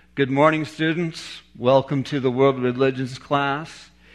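normal talking voice

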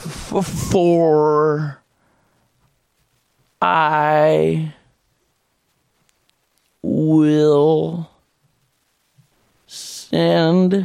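very low, halting, stumbling flat monotone drone. Mimicking a man who stumbles reading scripture aloud: stumbling monotone drone. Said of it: "drones in a monotone".

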